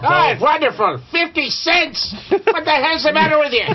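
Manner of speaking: high, swooping put-on voice.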